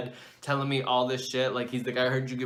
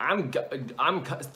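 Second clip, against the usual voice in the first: ordinary talk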